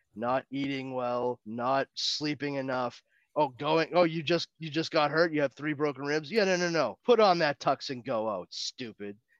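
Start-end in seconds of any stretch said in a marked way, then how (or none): 3.4-9.2 put-on chiding voice. A speaker describes how Alfred should treat Bruce; mock-chiding as Alfred. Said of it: "perfectly willing every time to chide Bruce".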